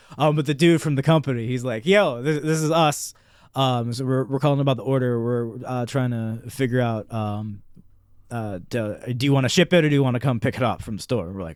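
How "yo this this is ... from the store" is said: ordinary talk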